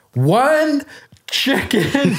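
very high-pitched yell. Retelling calling a loud, busy restaurant to order: imitating yelling.

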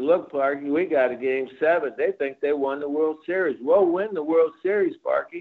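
ordinary talk

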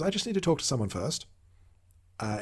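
put-on very calm voice. Recapping a show scene, quoting a character's reply, retelling a very calm line. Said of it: "Eric very calmly says".

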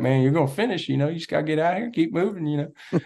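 put-on Memphis-style Southern country accent, pitched a bit high. Retelling a climb, speaker quotes a volunteer from Memphis, imitating Billy Simpson's country accent. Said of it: "he's got this like country accent and he's like".

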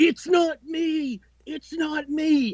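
very high, very slow, drawn-out screaming. Telling how a man ran into his backyard full of cops, retelling a scream. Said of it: "he starts screaming".

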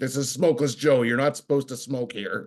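light, mild yell with a scolding tone. Retelling how a guy yelled at employees smoking out back: imitating Joe yelling. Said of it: "some guy would randomly start yelling at you".

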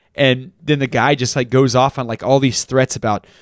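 ordinary talk

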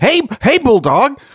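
mock-excited, starstruck, gushing voice. Recapping a scene, acting out Martin greeting Bulldog, imitating his excited greeting. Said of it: "he's like excited".

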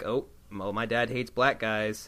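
ordinary delivery

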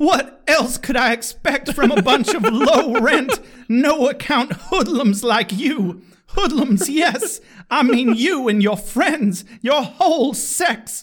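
dramatic, high, belted stage diva delivery.

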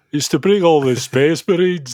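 put-on Scottish Brummie accent. Podcast host explaining the rail line to listeners, in a put-on Scottish Brummie accent. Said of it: "I don't know where that accent was going".

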